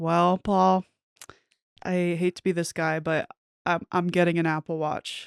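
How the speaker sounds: plain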